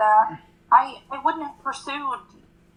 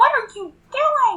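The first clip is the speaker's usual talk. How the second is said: very high, shrill screaming; 10 semitones higher than usual. Sapphire sees Mom come out holding Sappy in her teeth: screaming. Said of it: "And Sapphire screams".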